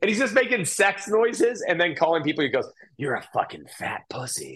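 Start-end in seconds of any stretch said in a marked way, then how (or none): 3.0-4.6 creepy, breathy, whispered stage voice. Retelling a comic's onstage act, imitating George's creepy stage voice.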